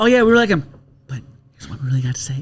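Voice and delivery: put-on whisper. Acting out a line from an SNL skit: imitating an SNL skit whisper. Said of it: "they kinda whisper".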